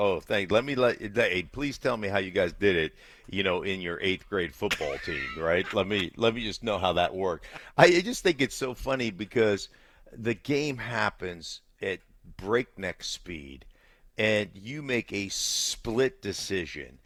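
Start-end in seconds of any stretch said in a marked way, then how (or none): 0.0-7.5 biting, snarky, know-it-all sarcastic tone. Answering how he would react to critics texting in: acting out a snarky reply. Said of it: "I would say something snarky like".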